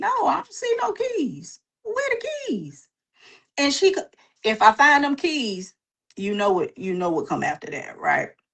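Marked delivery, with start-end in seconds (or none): 0.0-2.9 put-on very high, swooping little-kid voice. Retelling a child answering the mother about the keys: imitating a child. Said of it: "And you like".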